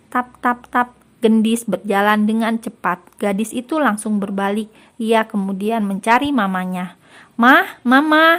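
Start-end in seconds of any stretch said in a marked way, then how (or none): 7.4-8.4 loud, high shouted call. Reading a story: a daughter calls for her mother, shouting.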